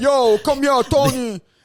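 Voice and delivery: New Jersey wiseguy-style accent. Contrasting two types of Italian, the speaker does a mock Italian-American accent. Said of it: "there's two types of Italian".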